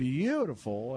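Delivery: beautiful with heavy stress. A radio host listing sponsor locations on air, stressing the word beautiful. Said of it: "and I do emphasize the word beautiful".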